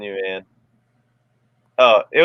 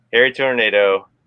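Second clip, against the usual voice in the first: usual speaking voice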